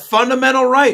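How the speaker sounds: angry woman's voice, shrill, very high and loud. Quoting a candidate's answer on exempting religious groups: imitating an angry woman.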